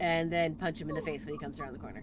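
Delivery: ordinary talk, nothing marked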